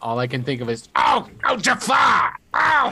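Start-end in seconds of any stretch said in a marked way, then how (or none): 1.0-2.9 high, very slow voice, every word stretched. Imitating Iago from Aladdin: Gilbert Gottfried as Iago impression. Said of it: "that's not a bad impression".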